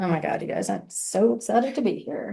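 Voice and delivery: listless, very quiet, unexcited whispered murmur. Speaker shows how tone changes the same words: flat, unexcited tone. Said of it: "my body language and tone drastically changed".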